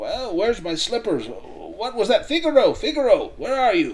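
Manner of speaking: high, loud calling out. Voicing a character who wakes from noise above: Sam Flanagan voice, just woken up. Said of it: "you can hear him shuffling his feet".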